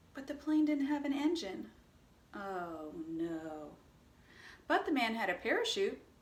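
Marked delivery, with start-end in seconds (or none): 2.3-3.7 soft, low-voiced "oh no". Telling a call-and-response story, answering 'oh no' in a low-pitched voice. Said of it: "you use a low-pitched voice".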